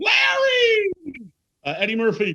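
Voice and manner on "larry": shrill, very high, hard, shouted voice. Running through impressions, shouting a name: Jeff Garlin voice. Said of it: "Jeff Garlin".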